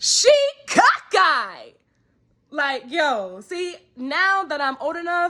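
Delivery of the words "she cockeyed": sudden, high yell, swooping wildly, out of nowhere. Demonstrating how a man three or four tables away yelled out of nowhere: yelled. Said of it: "Like he yells. I'm talking about like like this. I'm gonna demonstrate".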